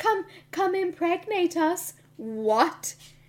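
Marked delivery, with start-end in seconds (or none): 0.0-1.9 pitched-up, put-on voice of creepy twins. Imitating the twins from The Shining coming in: The Shining twins voice. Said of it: "twins from The Shining coming in".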